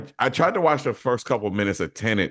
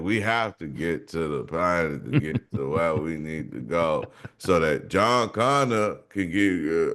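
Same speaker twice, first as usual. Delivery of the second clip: dry, stiff, wooden line reading; 7 semitones lower, 3 dB quieter than usual. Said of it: "He's very dry and stiff".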